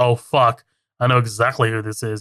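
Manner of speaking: guarded, defensive, said quietly to himself. Retelling a scene where Hank starts to get defensive: imitating Hank getting defensive. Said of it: "he starts to get defensive".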